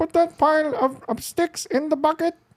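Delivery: put-on grandma voice pitched very high. Retelling the grandma giving orders while clipping her roses: grandma impression. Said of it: "I'm gonna do an impression of my of my grandma right now".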